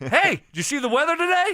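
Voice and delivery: mock gleeful tone. Imitating how the other person said something earlier, mock-gleeful. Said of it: "you said it kind of like gleefully".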